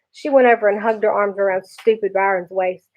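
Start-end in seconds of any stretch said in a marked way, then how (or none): none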